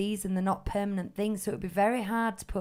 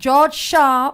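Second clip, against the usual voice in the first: very loud, high-pitched scolding teacher voice; 6 semitones higher, 14 dB louder than usual. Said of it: "my teacher voice really came out then".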